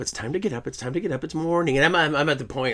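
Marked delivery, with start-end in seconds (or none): 0.0-1.8 gentle, soft, sweet little voice. Retelling how mom used to wake them up: imitating a sweet wake-up voice. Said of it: "she does this little sweet wake up".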